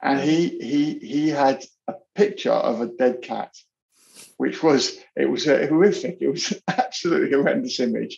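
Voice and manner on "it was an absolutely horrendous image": nervous giggling laughter through the words. Describing a horrific image of a dead cat: nervous laughter while talking. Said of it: "I don't know why I'm laughing".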